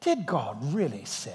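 soft, clever-sounding put-on English accent. Acting out a liar's question in a put-on English accent. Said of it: "he says it with that English accent".

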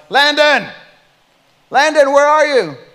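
very high-pitched, loud yell. A parent searching the house for their child, retelling yelling his name. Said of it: "we're yelling their name".

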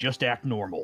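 under-the-breath clenched-teeth mutter. A half-orc pulls up a chair beside the players and smiles, through clenched teeth. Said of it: "he says through clenched teeth".

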